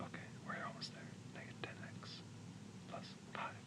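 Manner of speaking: whispered mumble, muttered under his breath. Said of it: "I'm just gonna mumble to myself".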